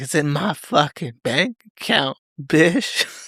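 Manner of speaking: venomous, angry voice laced with pure venom. Retelling a man's reply when asked where the money is, imitating venomous anger. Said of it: "with actual fucking like venom in his voice".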